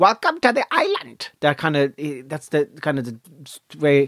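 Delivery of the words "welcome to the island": very high, odd, swooping sing-song drawl. Retelling how the island's king met people off the boat: Patsy Dan impression. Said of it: "That's my impression of Patsy Dan".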